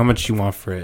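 ordinary talk

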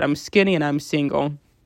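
plain

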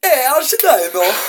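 put-on near-Italian accent. Delivering a joke's punchline to a co-host, in an almost Italian accent. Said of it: "That almost sounded like an Italian accent".

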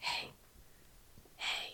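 ghostly, very soft whisper, barely audible.

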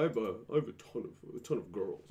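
put-on bragging voice. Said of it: "it's kinda like that".

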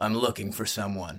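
ordinary delivery

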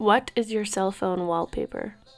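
secretive, hushed half-whisper close into the mic. Reading a question into the mic so the other can't hear: half-whispering. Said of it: "so that I can whisper so she can't hear me".

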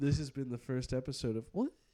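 voice cracking badly in the middle of the line. Host signing off the first podcast episode, voice cracking badly. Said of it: "my voice cracked really bad there".

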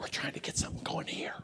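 low, rushed, hushed voice. Retelling what another man said to him, in a lowered voice. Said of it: "he kind of lowered his voice".

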